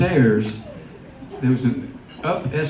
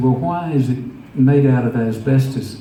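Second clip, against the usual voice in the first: ordinary delivery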